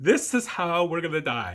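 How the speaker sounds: all-out, high-pitched screaming. Retelling the seat slamming forward on the curves: imitating screaming. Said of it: "all you hear is us screaming".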